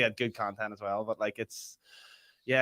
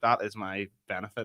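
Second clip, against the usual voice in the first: ordinary talk, nothing marked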